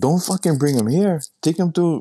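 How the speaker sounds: put-on yelling. Retelling how the lady yelled back: imitating someone yelling back. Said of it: "The lady yells back".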